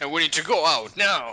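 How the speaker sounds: put-on angry, irritated delivery. Playing a scientist father urging escape: acting pissed off. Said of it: "so I'll sound like this".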